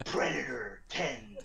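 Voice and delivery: slow movie trailer announcer voice.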